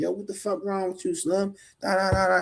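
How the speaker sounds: put-on, very high, shrill, furious angry yelling. Retelling inmates storming out of the TV room: imitating men screaming at someone. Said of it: "Dudes are screaming on him".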